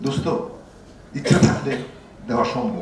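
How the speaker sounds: soft, low, quiet voice.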